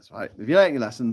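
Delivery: ordinary delivery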